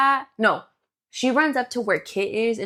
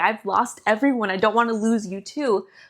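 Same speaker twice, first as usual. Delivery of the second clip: mock-tearful, crying, pleading voice. Retelling a scene, speaker acts out a woman pleading with a man, imitating someone crying. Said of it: "And she's like crying".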